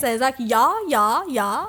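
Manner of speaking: put-on South African accent, South African "yeah". Imitating how a South African man says yeah, in a South African accent. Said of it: "South African ... how he says it".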